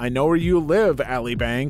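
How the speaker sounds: usual speaking voice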